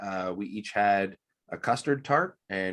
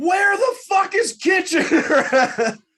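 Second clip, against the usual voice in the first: put-on very loud, very high, drawn-out drunken scream; 10 dB louder than usual. Retelling a drunk guy's realization heard on the episode: imitating a drunk guy screaming. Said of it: "This dude just screams".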